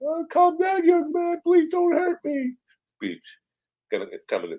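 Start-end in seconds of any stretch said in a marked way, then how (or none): 0.0-2.5 put-on very high, frightened, pleading old-man voice. Imagining being cut off later, imitating a frightened old man pleading. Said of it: "now that I'm the old man".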